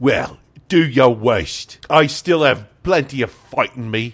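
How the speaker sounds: shoddy fake Cockney accent. A narrator voices a kidnapped man answering his captors, in a bad Cockney accent. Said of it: "It's shit Cockney coming from me".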